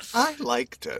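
very high pitch with heavy stress on I. Quoting Veronica Cartwright's compliment on his performance, with stress on 'I'. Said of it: "Emphasis on the I".

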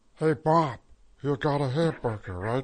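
cheerful cartoon-style voice. Doing impressions of Bob's Burgers characters: Teddy impression. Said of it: "maybe I'll go out and do that guy".

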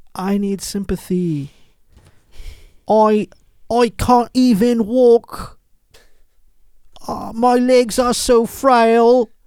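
very high, cheap-sounding fake British accent. Reporter reenacting a man's line from an interview, in a dollar-store british accent. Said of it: "sporting a dollar store British accent".

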